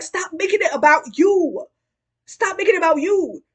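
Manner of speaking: play-acted angry yell, loud and high. Recounting a scene where she yells at the woman she didn't invite: retelling a yell. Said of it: "And she like yells".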